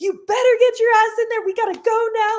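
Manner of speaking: very high, shrill, screamed yelling. Retelling how a nutritionist yelled at a fighter to get in the car: imitating someone yelling.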